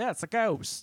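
put-on American Southern accent, pitched high. Speaker voicing what any person could say: Southern accent. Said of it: "I don't know why I keep going Southern".

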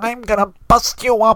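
held-nose voice, pitched very high, slow. Describing a character picking a fight, imitating Tom's held-nose voice. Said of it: "like the voice actor held his nose while he's talking".

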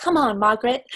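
put-on high, prim, poised young princess voice. Retelling the end of a recording of the young princess: impression of the young future Queen. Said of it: "spot on impression".

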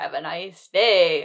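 put-on words laughed out in slow cackle. Retelling the hall monitor taking a girl to class: imitating a cackle while speaking. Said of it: "when he cackles, he's being like".

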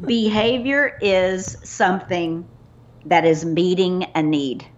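slow, deliberate pace, each word given time. Repeating a guest's point slowly so listeners really soak it in, slow and deliberate. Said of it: "I want to say it slow".

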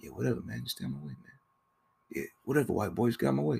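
very quiet, mousy little voice. Speaker retells how a character talks at a garage meeting, speaking like a mouse. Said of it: "he's speaking like a mouse".

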